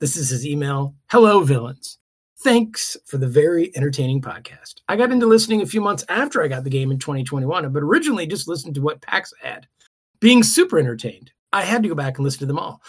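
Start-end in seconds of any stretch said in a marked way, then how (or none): none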